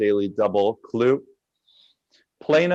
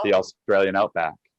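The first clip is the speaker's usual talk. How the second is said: plain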